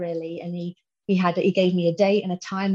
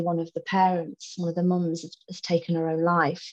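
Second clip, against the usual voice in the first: usual speaking voice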